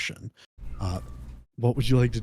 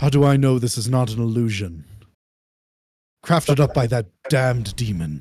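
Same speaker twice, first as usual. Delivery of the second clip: put-on English accent, louder; 4 dB louder than usual. Voicing Elric questioning the party: British accent as Elric. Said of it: "Why are you British?".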